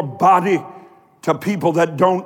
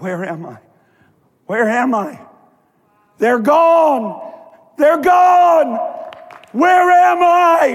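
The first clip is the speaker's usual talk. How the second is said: drawn-out, high, rising screamed cry; 9 semitones higher, 3 dB louder than usual. Retelling how a woman fell to the floor: imitating someone screaming. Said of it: "started screaming out".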